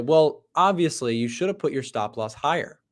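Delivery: ordinary delivery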